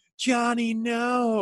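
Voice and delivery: put-on, very high-pitched, screaming voice. Retelling a mom calling to her child crossing the street: imitating a mom screaming. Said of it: "she was screaming".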